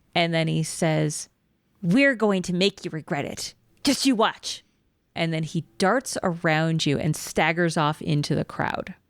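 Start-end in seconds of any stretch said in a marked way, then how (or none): 1.8-4.6 kobold voice with a sneer in every word. Game master voicing a kobold taunting the players before it darts away, sneering kobold voice. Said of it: "he kind of sneers at you".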